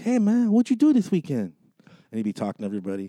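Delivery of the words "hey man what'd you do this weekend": very high put-on voice of a dim-witted man. Retelling an old sketch character who chats with coworkers: imitating Vasquez character. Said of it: "his thing was like, he'd be like".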